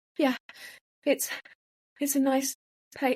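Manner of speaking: acted scared-stiff, frightened voice. Retelling answering a man's questions while he did the procedure, imitating terrified speech. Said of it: "terrified I couldn't speak".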